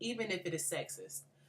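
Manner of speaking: ordinary talk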